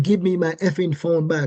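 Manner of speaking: ordinary talk, nothing marked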